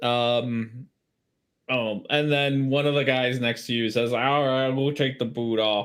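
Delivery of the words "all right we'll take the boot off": put-on slightly slurred, tipsy-sounding speech. Voicing a helpful tipsy man offering to remove boots: slightly slurred drunk speech. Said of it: "he's sounding a little bit slurry".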